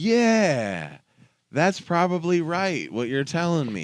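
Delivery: high, slow, patronizing, condescending, agreeable-sounding tone. Quoting a man who agrees with you, imitating condescending agreement. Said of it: "being the most condescending way of like, but also agreeing with you".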